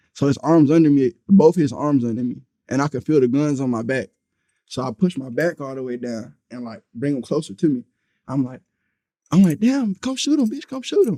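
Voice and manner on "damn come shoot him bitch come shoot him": mock shrill, very high-pitched yelling. Speaker recounts a struggle with a man holding guns: retelling a yell. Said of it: "I'm yelling at him".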